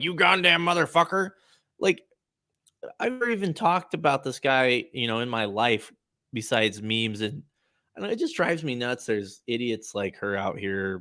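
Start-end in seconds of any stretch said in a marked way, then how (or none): 0.0-1.3 mock furious, high-pitched, loud screaming. Retelling a meme clip where Alex Jones screams at someone: imitating Alex Jones screaming. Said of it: "he's screaming at someone like".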